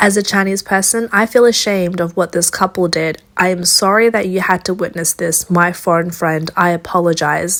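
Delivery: ordinary talk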